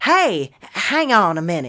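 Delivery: put-on overdone country accent. Speaker tries out a voice for a character line, too-country accent. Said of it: "That's that's too country".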